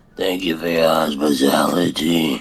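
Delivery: gruff mobster-style voice. Voicing a character thanking hosts for hospitality: mafia guy voice. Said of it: "You sound like the mafia guy".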